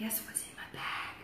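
soft, very quiet, barely voiced whisper. Retelling shaking a bag in front of the kids, whispered. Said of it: "and I'd whisper it".

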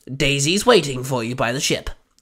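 plain reading voice

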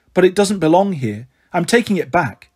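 ordinary delivery

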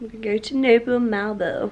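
clumsy, slow, bad put-on American accent. Planning a trip to malibu, speaker tries a bad put-on american accent. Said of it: "That was my attempt at an American accent, which sucks".

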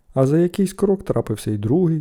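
plain

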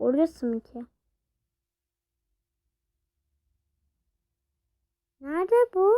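nervous, scared, uncertain tone. Playing a scary game and talking to viewers, frightened. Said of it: "Arkadaşlar korktum".

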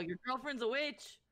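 high-pitched yell shouted in character voice. In a role-play scene, a player's character yells in character. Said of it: "And I'm gonna yell".

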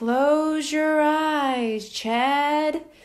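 gentle, soft, very slow, drawn-out murmur. Hypo, passing his wand before chad's eyes before an audience, speaks softly. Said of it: "Hypo said in a soft voice".

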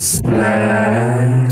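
low, loud monstrous voice.

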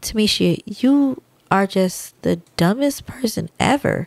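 calm, slow, gentle, sweet and easygoing tone. Showing that tone makes a difference, saying an insult: calm, nice tone insult. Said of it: "you could be talking to me calm like".

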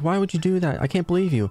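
freaked-out, panicky outburst. Retelling a close call in the game, imitating Livy freaked out. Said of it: "Livy gets all freaked out. She's like".

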